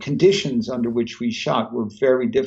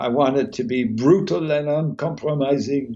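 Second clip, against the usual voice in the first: put-on French accent; 2 semitones higher than usual. Recall what your director said about the script, imitating the director's French accent. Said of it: "he said in his French accent".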